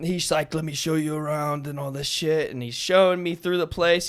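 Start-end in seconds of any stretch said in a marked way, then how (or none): 0.5-1.7 put-on thick, heavy Russian or German accent. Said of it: "this thick, like, Russian or German accent".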